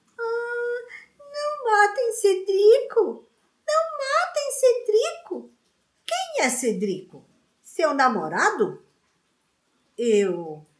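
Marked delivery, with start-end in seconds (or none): 0.2-5.5 very high, whining, mocking falsetto. Taunting the boy about his dreams, his cousin puts on a whiny mocking falsetto. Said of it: "fez uma voz de falsete e lamúria".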